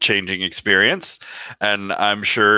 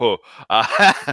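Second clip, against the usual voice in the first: laughing. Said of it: "I believe you are laughing".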